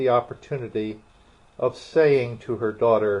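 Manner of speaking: ordinary delivery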